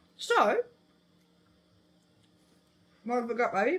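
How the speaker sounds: talking with mouth full of food. Tasting treats with another speaker, talking with mouth full. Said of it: "I got a mouthful of food".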